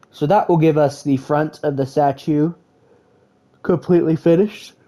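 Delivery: speaking through a yawn. A speaker giving step-by-step building instructions, yawning. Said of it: "My apologies for yawning".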